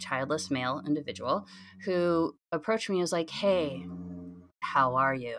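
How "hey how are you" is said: put-on very somber and grave, low and slow. Retelling how a man approached them at a gathering, imitating his somber tone. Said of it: "With like a really like somber tone".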